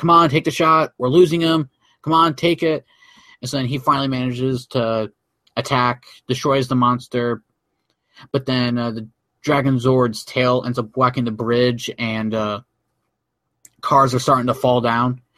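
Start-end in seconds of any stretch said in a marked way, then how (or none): 0.0-2.8 loud, yelled, bossy shouting. Retelling a show scene where Jason urges Tommy: imitating Jason yelling. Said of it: "Jason's yelling at him too".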